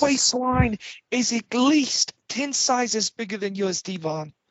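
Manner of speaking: shrill, high, loud taunting yell. Taunting Devon, the speaker does a Dudley impression. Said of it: "Now we got a Dudley impression too".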